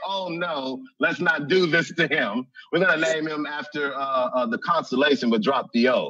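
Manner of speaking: ordinary talk, nothing marked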